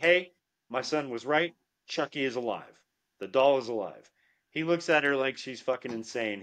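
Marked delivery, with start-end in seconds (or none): none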